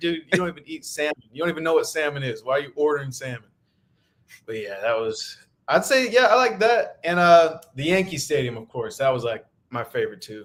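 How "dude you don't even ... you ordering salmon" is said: plain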